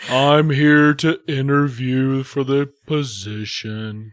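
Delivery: painfully slow drawl, every word dragged out. Imitating a very slow job applicant as Eeyore: Eeyore voice. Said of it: "Was he kinda like Eeyore".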